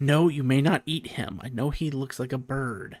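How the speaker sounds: muttered under the breath. Voicing Alfie in a role-playing scene: Alfie muttering under his breath. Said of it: "you'll hear Alfie say under his breath".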